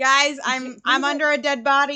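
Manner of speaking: loud, drawn-out yell. Pinned under a body in a tunnel, a character calls to the group, yelling from down a hole. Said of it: "she's yelling from down in this hole".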